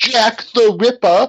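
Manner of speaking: very high, exaggerated put-on London policeman accent. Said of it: "he literally does that kind of accent".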